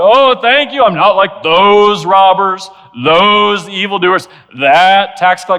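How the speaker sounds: aggressive, combative, forceful, loud and drawn out. Acting out a prayer spoken on a street corner: aggressive. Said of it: "I could read this very aggressively".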